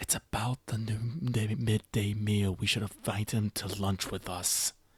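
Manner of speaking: hushed, quiet half-whisper. Leaning over in character to suggest inviting a guest: half-whispering. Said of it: "Leslog and whisper".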